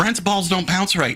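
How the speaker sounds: a loud yell. Retelling what a guy shouted as he left: imitating someone yelling. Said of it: "All he's yelling is".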